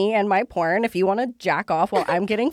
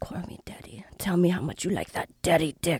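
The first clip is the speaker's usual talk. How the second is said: put-on whisper, quieter; 3 semitones lower, 7 dB quieter than usual. Retelling what was whispered in the ear: imitating Manuel Ferreira whispering. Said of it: "whispering in my ear".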